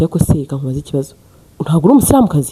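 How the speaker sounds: plain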